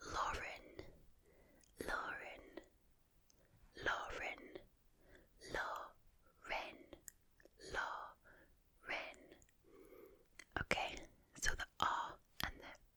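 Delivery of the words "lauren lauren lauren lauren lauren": soft, very slow English accent. Teaching accents, saying her own name in an English accent. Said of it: "So my name in an English accent would be".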